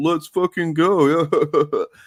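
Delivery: high, loud, derisive mocking tone. Imitating critics saying a trailer line: imitating a mocking tone. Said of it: "in a mocking tone".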